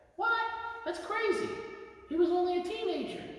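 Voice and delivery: very high, puppet-style voice. The performer speaks as his puppet, reacting, in Eugene puppet voice. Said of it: "his puppet Eugene".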